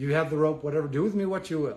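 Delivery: ordinary talk, nothing marked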